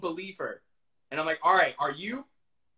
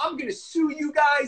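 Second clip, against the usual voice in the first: high, cocky, mock heated shouting; 8 semitones higher, 3 dB louder than usual. Former Big Brother contestant retelling threatening to sue the show, retelling screaming a threat. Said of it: "and I started screaming at them".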